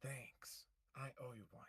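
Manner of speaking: hushed, quick whisper. Game master voices a character thanking a player with a thumbs up, whispering. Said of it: "gives you a thumbs up and whispers".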